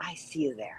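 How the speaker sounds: imitated whisper. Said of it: "I heard someone whisper".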